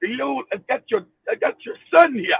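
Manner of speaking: swooping put-on Mexican accent. Acting out a caller phoning a family about their son, in a put-on Mexican accent. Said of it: "in a Mexican accent".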